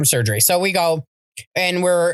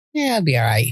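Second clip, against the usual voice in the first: mock calm, reassuring voice, lower; 4 semitones lower than usual. Retelling how Tom reacts while she panics: imitating Tom's calm unbothered tone. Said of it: "And he's like".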